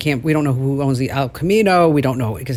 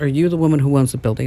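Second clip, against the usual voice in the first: put-on broken English. Retelling what a woman asked at the building: imitating broken English. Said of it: "she says to me in broken English".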